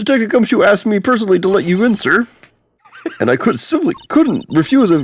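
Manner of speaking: very high, loud, puppet-like character voice. Voicing a guard character who lets the detective in: Kermit the Frog voice. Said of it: "Yo, it's Kermit".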